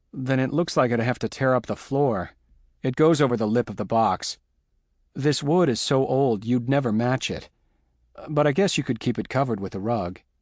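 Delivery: ordinary delivery, nothing marked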